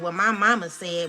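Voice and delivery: put-on sassy delivery, full of attitude. Retelling what a young girl in her care answered: imitating a sassy retort. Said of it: "with an attitude".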